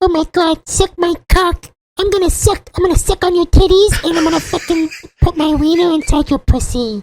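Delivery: very high-pitched puppet monster voice. Asked by another speaker for his best Elmo impression: best Elmo impression. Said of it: "Can can we get [name]'s best Elmo impression?".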